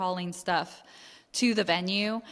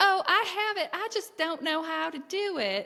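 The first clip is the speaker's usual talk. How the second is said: very high-pitched put-on southern accent; 10 semitones higher than usual. Retell what you said to the officer about your one headlight, in a southern accent. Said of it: "that southern accent".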